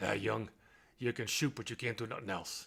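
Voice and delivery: rough, gravel-voiced delivery. Recalling being introduced to Red Auerbach as a freshman, speaker does Red Auerbach's gravelly voice. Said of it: "He just said in his gravelly voice".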